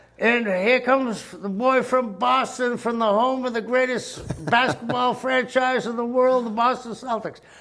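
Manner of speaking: very high ring announcer voice. Retelling a wrestling entrance, the speaker imitates the ring announcer. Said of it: "And the announcer says".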